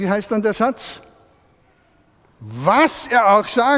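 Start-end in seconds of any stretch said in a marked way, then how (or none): 2.4-3.8 heavy emphasis on the word "was". Reading a sentence with its first word stressed: stress on Was. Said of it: "Betonen wir das erste Wort".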